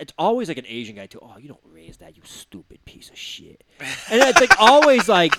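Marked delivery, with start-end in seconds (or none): 1.2-3.6 mock under-breath mutter, much lower, quieter. Mimicking a poker player scolding someone for raising, imitating an under-breath mutter. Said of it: "under their breath".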